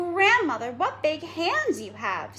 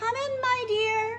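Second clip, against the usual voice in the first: fake grandmother voice, very high, very slow, drawn-out; 11 semitones higher than usual. The wolf, in Grandmother's bed, answers the girl's knock in a high voice. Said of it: "said the wolf in a high voice".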